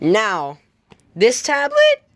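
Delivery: voice breaks, cracking up very high. Reviewing tablets and moving on to the next one, voice cracks. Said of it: "that was a voice crack".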